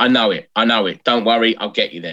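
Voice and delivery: normal talking voice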